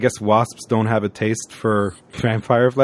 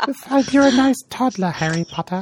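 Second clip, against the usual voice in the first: squeaky, very high elf voice; 13 semitones higher than usual. Repeating a line to the group, the speaker slips into a Dobby impression. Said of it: "I keep kind of going into a Dobby impression".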